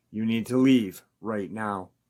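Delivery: ordinary delivery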